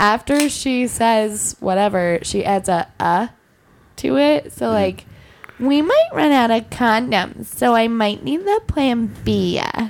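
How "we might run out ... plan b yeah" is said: put-on tipsy drunk girl voice with trailing "uh" added. Performing a bit for Billy, in drunk girl voice. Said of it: "Billy loves drunk girl voice".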